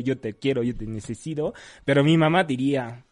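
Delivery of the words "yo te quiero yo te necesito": ordinary talk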